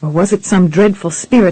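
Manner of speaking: plain reading voice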